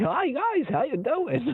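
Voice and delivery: whiny, annoying, very high, very slow drawn-out voice. Describing characters in a series, imitating their annoying voices. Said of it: "where they're just kind of like".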